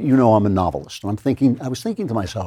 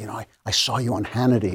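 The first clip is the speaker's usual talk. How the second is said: mock hushed voice, quieter; 5 dB quieter than usual. Retelling what people in Hollywood would come up and say: imitating people whispering. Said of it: "drop their voices and say".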